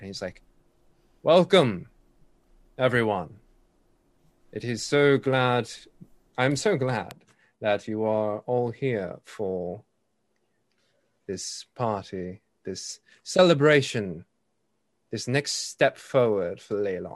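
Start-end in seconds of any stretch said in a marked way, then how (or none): 1.2-17.2 slow, carrying voice, projected and amplified across a hall. Voicing a speaker welcoming a party crowd: amplified carrying voice, not shouting. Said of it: "almost as if an amplified voice, but at no point is he shouting".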